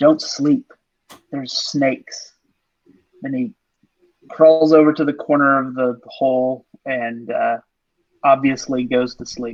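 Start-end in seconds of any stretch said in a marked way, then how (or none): 0.0-2.3 hushed whisper under the breath. Once the door is closed, a character whispers to the others. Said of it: "he whispers".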